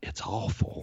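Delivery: sincere, earnest, near-whispered, breathy voice. Retelling a woman's answer to a producer at a party, imitating an earnest reply. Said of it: "she looks at him real earnestly and goes".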